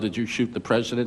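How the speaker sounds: ordinary talk, nothing marked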